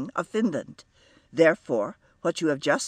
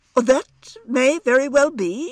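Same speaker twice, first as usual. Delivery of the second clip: voice rising and raised through the line; 9 semitones higher, 7 dB louder than usual. A man answers a woman insisting on her nationality; rising voice. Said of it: "said Mr. Brooke in a rising voice".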